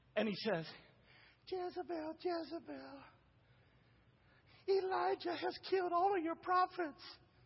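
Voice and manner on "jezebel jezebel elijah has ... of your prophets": high, weak, passive pushover voice. Retelling the story of Ahab running back to Jezebel, wimpy Ahab voice. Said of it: "I'm using that voice because Ahab was a wimp".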